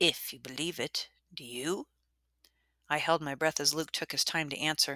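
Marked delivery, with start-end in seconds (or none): 0.0-1.9 low, wary, cautious, hushed voice. Matthew finally speaks to Luke after a silence, in a low, cautious voice. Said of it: "in a low, cautious voice".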